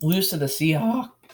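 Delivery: voice breaking and cracking mid-phrase. Predicting a football team's season losses, voice cracking. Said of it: "that was the worst voice crack ever".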